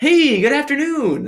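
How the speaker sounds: high, slow, chipper cop voice.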